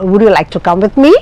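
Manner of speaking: question-like rising tune on final "me". Showing question intonation in an english lesson, rising pitch on final me. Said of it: "that end is just a sort of rising intonation".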